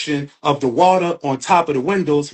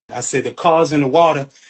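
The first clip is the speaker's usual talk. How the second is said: ordinary talk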